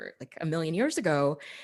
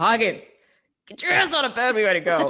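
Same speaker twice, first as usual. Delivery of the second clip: loud, high, harsh, blunt tone; 5 semitones higher, 7 dB louder than usual. Acting out the voice used on oneself in the morning: put-on not gentle self-talk voice. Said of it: "It's like".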